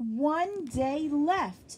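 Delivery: high, delighted squeal. Two girls counting down the days, squealing. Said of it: "squealed [name] and [name]".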